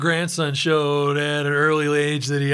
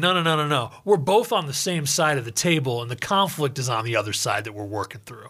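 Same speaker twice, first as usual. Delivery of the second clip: usual speaking voice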